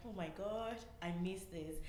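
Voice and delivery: ordinary talk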